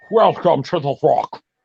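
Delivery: put-on Scottish actor voice. Answering a question about The Rock: Sean Connery voice. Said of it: "use the Sean Connery voice".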